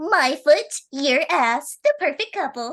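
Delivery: put-on obnoxious, shrill, very high, loud anime girl voice. Sharing a favorite quote used to annoy friends in voice calls, in an obnoxious anime girl voice. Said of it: "I do have a obnoxious anime girl voice".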